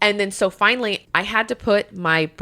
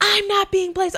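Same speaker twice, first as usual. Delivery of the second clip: mock very high-pitched, piercing ranting yell; 12 semitones higher than usual. Retelling what a lady said on being put on hold, imitating a woman yelling. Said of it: "And she's just yelling".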